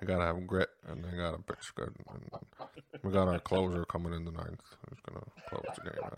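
hushed, very quiet, barely-talking mumble. Speaker doing an impression of an old-school baseball manager, barely talking. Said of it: "my impersonation of an old school manager. Like, barely talking".

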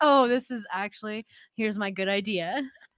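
sarcastic, mocking, teasing parroting voice. Imitating the other speaker who repeated an earlier idea: mocking imitation of the other speaker. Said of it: "Like it's".

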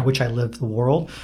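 ordinary delivery

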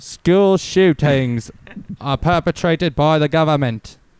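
put-on British accent. Practicing an accent by saying random sentences, in a put-on british accent. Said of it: "That's just how I'm learning how to do the accent".

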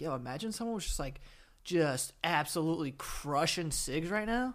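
ordinary talk

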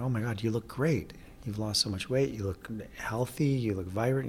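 ordinary talk

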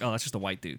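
normal talking voice

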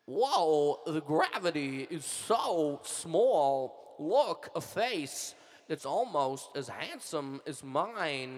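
slow celebrity voice, each word drawn out. Doing a Christopher Walken impression as if he were on Mars: Christopher Walken impression. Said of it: "are you a fan of Christopher Walken?".

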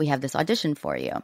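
usual speaking voice

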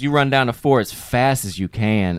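sassy, blunt, full-of-sass woman's voice. Retelling what a woman on the phone said: imitating a sassy woman.

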